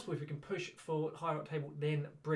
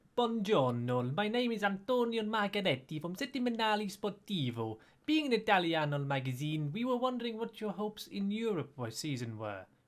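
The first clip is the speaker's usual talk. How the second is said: loud, bad fake Italian accent drifting Russian; 4 semitones higher, 5 dB louder than usual. Asking the manager about hopes in europe as a journalist: put-on italian accent sounding russian. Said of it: "you sounded a little bit more like you're Russian".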